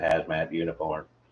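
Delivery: robotic voice. Quoting a radio host's famous line: Robot Grego robot voice. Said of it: "he'd slip into robot voice".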